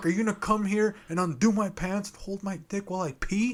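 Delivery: play-acted, high, worked-up, upset outburst. Retelling what he said to her while trapped in the restroom: retelling getting upset. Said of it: "starting to get like so upset".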